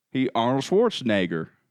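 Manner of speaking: put-on Southern accent. Asked by another speaker to say Arnold's last name, answer with a southern accent. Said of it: "Say Arnold's last name with a southern accent".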